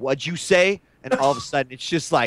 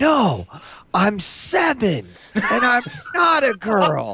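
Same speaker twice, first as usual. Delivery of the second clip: put-on high, swooping yell like a kid; 7 semitones higher than usual. Recalling a seven-year-old player on Team Fortress: imitating Mini Wheat yelling. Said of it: "he yells like".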